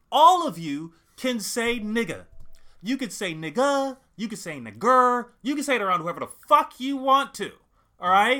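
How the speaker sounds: loud, emphatic, declaring tone.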